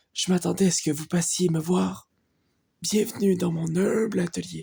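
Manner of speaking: put-on elderly man's voice. Reading a game character's dialogue aloud, speaker does an old man voice. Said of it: "une voix de vieux".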